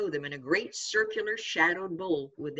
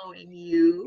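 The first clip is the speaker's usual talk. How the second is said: gentle, mild, easy tone; 4 dB louder than usual. Reading a story, a small girl answers her brother's question: said softly. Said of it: "she said softly".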